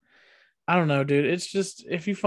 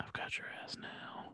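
soft, far-off ASMR whisper. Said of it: "We've made it to the A S M R portion".

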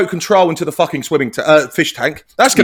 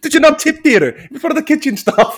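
very high-pitched put-on character voice and accent; 9 semitones higher than usual. Quoting a line from a favourite film scene: put-on accent quoting film character. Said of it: "I thought I'd done the right impression there".

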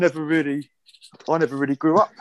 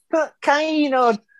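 put-on whingy teenage whine; 11 semitones higher than usual. Retelling what was said to the head coach, imitating Mike Ryan whingeing. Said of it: "in this really whingy sort of teenage voice".

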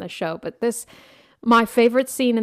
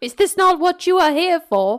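put-on, raised, played-up London Cockney accent; 8 semitones higher, 4 dB louder than usual. Answering another speaker's movie quote: Cockney accent.

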